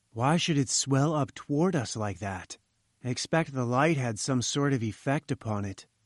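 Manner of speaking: ordinary delivery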